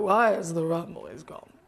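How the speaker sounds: low pirate captain voice. Imitating a brother doing his impression with the fingers: Jack Sparrow voice. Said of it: "My brother does the best impression of Jack Sparrow".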